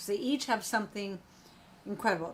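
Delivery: plain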